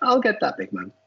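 squeaky, high little voice. Retell Paul McGrath's answer after you ordered drinks, in his squeaky voice. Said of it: "he goes in that squeaky voice".

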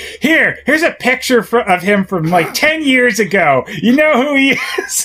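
pushy, in-your-face, confrontational voice, very high. Retelling how Piper questions a secretary: imitating Piper getting in someone's face. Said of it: "gets in her face about it".

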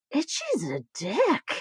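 quiet, under-the-breath muttering. Retelling the husband's remark while he watched the movie, retelling a quiet remark. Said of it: "he just goes quietly".

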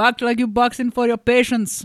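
put-on West African accent. Retelling what the boxing instructor said: imitating West African accent. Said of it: "West African, I'm not doing that impression right".

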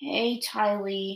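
soft, weary, flat, tired monotone. Narrator reading a story, Aang greets the grinning Ty Lee: tired monotone. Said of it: "his voice monotone of tiredness".

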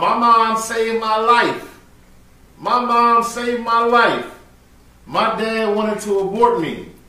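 high-pitched, repeated screaming rant. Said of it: "he was screaming off".

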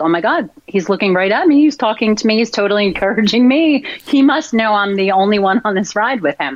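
ordinary delivery

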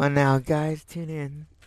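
very loud, slow put-on seductive voice. Asked to speak into the mic as seductively as possible: mock seductive voice. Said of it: "as seductive as you can".

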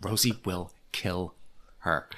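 low, slow, soft muttering under the breath. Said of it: "muttering under her breath".

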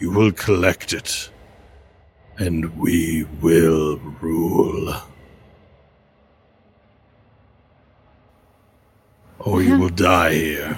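ominous, otherworldly, foreboding spirit voice. Voicing a mysterious voice that appears to a player: voice of a mysterious being. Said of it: "he appears and he says".

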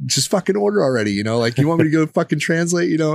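high, put-on, needling, scornful, mocking taunt. Retelling making fun of a man ordering at a drive-through: imitating mocking someone. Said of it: "I start making fun of him".

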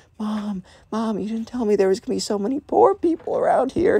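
half-whispered, pitched very high, hushed. Retelling a cousin talking to her mom: imitating someone half-whispering. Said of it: "whispering to her mom".

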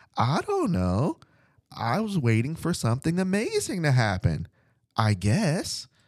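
put-on small, high, sing-song little kid voice. Retelling what the kid answered when asked, in little kid voice. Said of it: "in that little kid voice".

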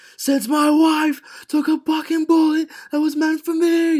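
very high, shrill, loud screamed outburst. Retelling a character's line from a show: imitating someone screaming. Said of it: "He screams it".

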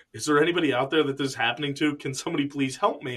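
imitated voice starting to cry, tearful. Retelling a character's breakdown while asking for help: imitating someone starting to cry. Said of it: "he's starting to cry".

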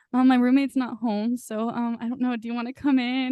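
put-on nervous voice with stammering. Retelling a drama scene where he invites her in: imitating a nervous guy. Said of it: "He's so nervous".

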